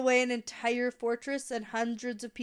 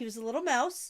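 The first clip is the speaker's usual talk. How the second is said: ordinary talk, nothing marked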